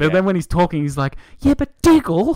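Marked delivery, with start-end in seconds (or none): 1.4-2.4 voice jumps way up, very high-pitched and raised. Making fun of a muscular man's voice when he talks, imitating a high-pitched voice. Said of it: "his voice is so high pitched".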